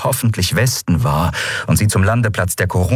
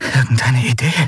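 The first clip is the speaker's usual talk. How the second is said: whispered, much higher; 4 semitones higher than usual. Lien speaks to Endriel as pirates guard the portals: whispered. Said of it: "flüsterte Lien".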